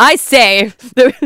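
put-on loud, high, old-fashioned posh British soldier voice.

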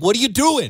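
high-pitched mock yell. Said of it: "De Niro's yelling at him".

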